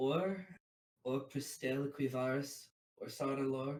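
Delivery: very quiet, hesitant, confiding, held-back voice. Speaking in character, admitting three names for the first time: saying very quietly. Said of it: "just say very quietly".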